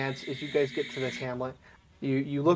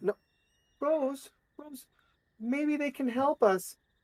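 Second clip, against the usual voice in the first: put-on very high, slow whimper in little boy voice; 11 semitones higher, 5 dB quieter than usual. Voicing a tearful little boy pleading with his sister: whimpering child. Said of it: "The little boy continues to whimper".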